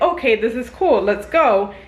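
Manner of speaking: ordinary delivery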